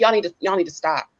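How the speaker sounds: hushed, half-whispered scolding tone under the breath. Retelling what they say to correct someone: imitating a half-whisper. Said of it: "And it's not loud".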